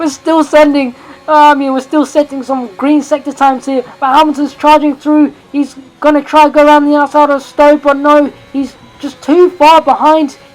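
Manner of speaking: high, loud, frantic race commentary. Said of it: "I'm going absolutely mental here".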